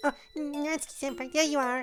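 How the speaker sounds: put-on very high squeaky girl voice. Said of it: "I could go higher pitch".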